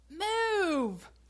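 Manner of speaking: high, sudden, barked-out shout. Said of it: "and just shouts".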